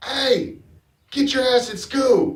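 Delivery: very high, drawn-out hollered yell. Retelling how someone yelled at kids in the street: imitating Laura yelling. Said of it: "Laura just yells out".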